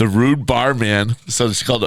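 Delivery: ordinary delivery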